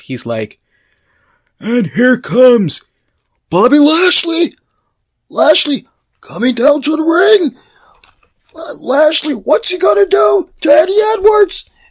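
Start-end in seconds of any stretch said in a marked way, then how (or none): 1.6-11.6 high, loud ringside announcer voice. Retelling wrestling commentary, imitating Josh Matthews. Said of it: "I gotta do this right. So you got Josh Matthews".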